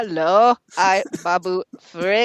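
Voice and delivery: character voice with each word drawn out very slowly. Greeting a co-host at the show's start: Babu Frick voice. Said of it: "It's my Babu Frick impression".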